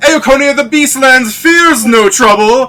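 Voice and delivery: very high, loud, over-the-top shrill birdlike shriek. Speaker tries out a voice for a game character: shrill over-the-top bird voice. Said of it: "way more over the top and shrill".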